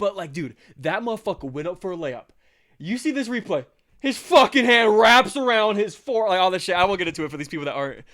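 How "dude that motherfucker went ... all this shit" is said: heated, very loud, high-pitched yelling. Talking to listeners who aren't sports fans, the speaker is yelling. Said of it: "Yeah, I'm yelling".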